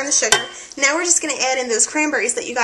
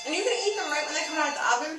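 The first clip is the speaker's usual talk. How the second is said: soft mumbling through a mouthful of food; 4 semitones higher, 8 dB quieter than usual. Tasting the finished bake on camera, talking while chewing. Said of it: "I'm chewing in front of the camera".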